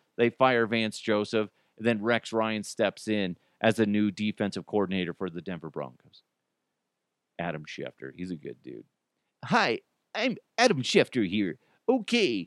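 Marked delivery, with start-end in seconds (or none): 9.4-12.5 odd, animated, weird voice with swooping pitch. Joking about a sports reporter, imitating Adam Schefter impression. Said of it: "He has a weird voice".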